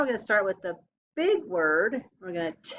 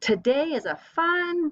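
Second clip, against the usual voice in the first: reading aloud with real excitement; 8 semitones higher than usual. Teacher reading an exclamation sentence aloud with first graders, excited. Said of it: "say with some excitement".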